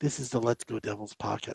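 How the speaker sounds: very soft, hushed public radio announcer voice. Practicing a podcast intro on a condenser mic, the speaker does the NPR voice. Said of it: "the not so much the N P R voice".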